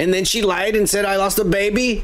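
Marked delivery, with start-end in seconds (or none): none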